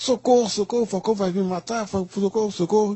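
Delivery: play-acted high, frantic, desperate pleading cry. Retelling how the jailer panicked in the church: imitating someone screaming for help. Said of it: "começou a gritar".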